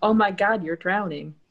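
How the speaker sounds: acted-out dramatic screaming. Recounting nearly drowning, speaker acts out her friend's reaction: retelling a friend's scream. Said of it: "But more dramatically, screaming".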